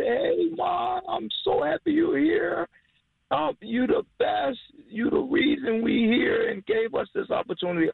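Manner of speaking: very high, loud, rough-edged, overjoyed excitement. Retelling greeting someone who came into the restaurant kitchen: retelling a loud excited greeting. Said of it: "I'm saying this really loud in the kitchen".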